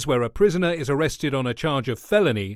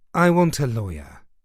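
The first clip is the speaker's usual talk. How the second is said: washed-out, weary, drained voice; 3 semitones lower than usual. Reading a novel aloud, a suspect under questioning: washed-out voice. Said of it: "Manton said in a washed-out voice".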